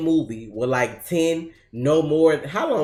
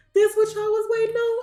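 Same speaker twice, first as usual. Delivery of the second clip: very high-pitched put-on voice, way up. Speaker acts out opening a video reply to critics, in a high-pitched voice. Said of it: "In my high pitched voice".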